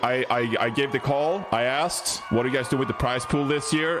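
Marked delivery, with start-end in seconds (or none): none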